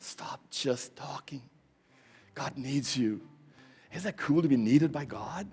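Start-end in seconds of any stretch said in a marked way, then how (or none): 0.0-1.4 softly spoken, quieter. Urging listeners to stop just talking: saying it very softly. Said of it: "I'm saying it very softly".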